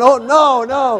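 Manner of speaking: frightened, panicked, flustered outburst, losing composure. Man recalling critters running toward his garage, re-enacting his panic. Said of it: "So I'm panicking".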